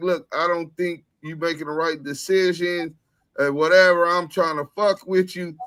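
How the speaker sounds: ordinary talk, nothing marked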